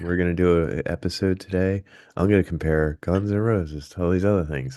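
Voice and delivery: mild-mannered, polite, meek, calm host voice. Doing an impression of the co-host from their first episode: meek, quiet, calm impression of the co-host. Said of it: "let me do an impression of you".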